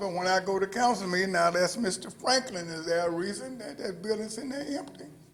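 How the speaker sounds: usual speaking voice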